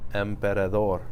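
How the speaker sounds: emperador with last syllable dor stressed. Stress lesson on words without accent marks: stress on dor in emperador. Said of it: "The last syllable is the natural stress".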